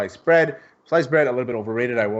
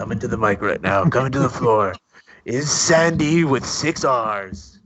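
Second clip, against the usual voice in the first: put-on club dj announcer voice. One host teases another about how he talks into the mic: stripper DJ voice. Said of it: "you sound like a stripper DJ saying".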